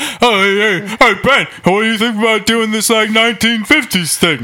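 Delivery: loud, dumb mocking voice. Imitating another speaker's earlier suggestion: imitating another speaker, loud and dumb. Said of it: "that was you. Just loud and dumb".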